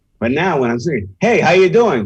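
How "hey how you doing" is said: high, loud, much more emphatic. Explaining how to greet someone in interviews like this, with much more emphasis. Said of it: "You have to do it with much more emphasis".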